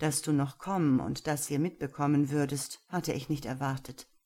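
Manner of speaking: plain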